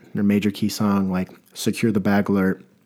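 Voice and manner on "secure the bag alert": ordinary talk, nothing marked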